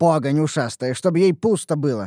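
usual speaking voice

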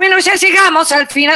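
shrill, high-pitched voice.

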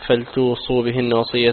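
ordinary talk, nothing marked

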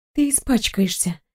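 softly mumbled. The girl answers the captain's question, quiet mutter. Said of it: "тихо пробормотала девушка".

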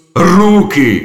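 loud, high-pitched shriek. Kromeshny cuts off the person examining the chain: shrieked. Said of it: "вирискнув Кромешний".

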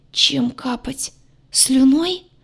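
constricted, squeezed-out rasp. A narrator reads a grayed yard's reply in a story, a strained hoarse croak. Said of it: "сдавленно прохрипел".

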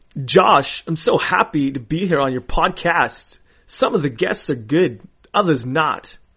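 swooping, sing-song star voice impression. Asked on a podcast to do an impression: Christopher Walken impression. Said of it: "it's just his up and down high pitched voice".

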